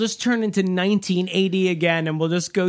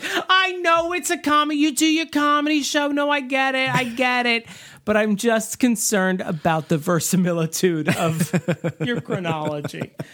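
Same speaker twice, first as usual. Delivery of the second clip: motherly voice, higher pitch; 5 semitones higher than usual. Replaying own complaint about a comedy show's accuracy: sounding like my mom. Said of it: "I sounded like my mom".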